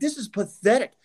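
acted, furious, unhinged, high-pitched berserk ranting outburst. Retelling a color commentator's reaction to a player's ejection, mimicking a berserk rant. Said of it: "he's going absolutely berserk".

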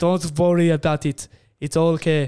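put-on, fake Austrian accent. Quoting what a man said to him, in a put-on Austrian accent. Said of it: "Now he's Austrian".

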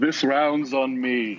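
calling out loudly. A player's character turns around in the tavern to address everyone, in a raised voice. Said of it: "I'm going to raise my voice".

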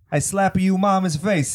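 bad put-on Italian accent. Riffing in a comedy bit with another speaker, fake Italian accent. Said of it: "I'm totally Italian".

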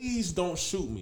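play-acted soft, high, desperate begging. Retelling a video of a man on the ground facing a tactical team, imitating a man begging. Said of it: "He was begging".

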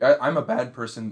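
slow delivery, voice breaking and cracking partway through. Answering a question about shooting a basket: voice cracking. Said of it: "Nice voice crack".

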